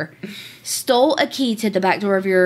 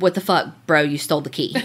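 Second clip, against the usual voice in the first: mock matter-of-fact, plain delivery; 4 semitones lower than usual. Retelling a recorded call confronting the key thief, imitating a matter-of-fact tone. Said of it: "she very matter-of-factly says".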